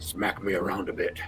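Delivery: hushed whispering. In a role-play, whispering to a fellow character walking past, whispering. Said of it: "I I whisper to you".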